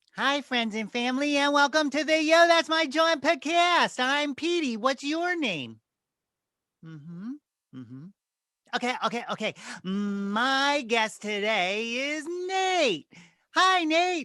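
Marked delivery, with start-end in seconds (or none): 0.2-4.8 high, pitched-up puppet voice. Starting over the podcast welcome as Petey: Petey the Muppet voice. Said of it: "Petey's my Muppet".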